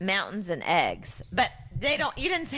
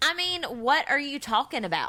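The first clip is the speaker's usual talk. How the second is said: put-on Southern accent, pitched higher; 7 semitones higher than usual. Asked by a co-host to embody Brittany, southern accent as Brittany. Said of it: "going to have to pull up the southern accent".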